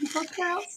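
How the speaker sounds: soft, high-pitched customer-service phone voice. Showing how the speaker answers the phone: customer service phone voice. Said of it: "I'll be like".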